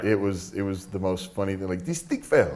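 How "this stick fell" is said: bad Puerto Rican accent, higher pitch. Retelling what a referee said during a match: horrible Puerto Rican accent. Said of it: "That's a horrible Puerto Rican accent".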